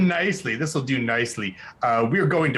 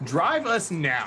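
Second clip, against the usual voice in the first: firm, commanding, authoritative voice; 4 semitones higher than usual. Using a magic power on a driver: commanding voice. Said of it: "can I hit him with commanding voice?".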